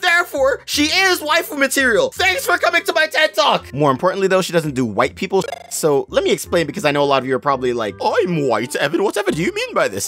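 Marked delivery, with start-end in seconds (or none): 8.0-10.1 put-on sing-song voice.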